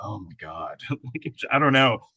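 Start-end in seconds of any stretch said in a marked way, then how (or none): 0.0-0.8 very soft inner groan of dismay. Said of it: "Timothy is probably silently going".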